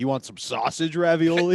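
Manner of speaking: normal talking voice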